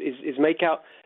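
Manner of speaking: plain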